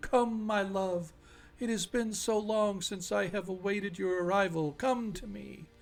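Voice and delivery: soft, soothing, luring, lulling creature voice. Game master voices a beautiful water creature calling to a player: lulling creature voice. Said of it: "you hear this lulling voice from this from this beautiful creature".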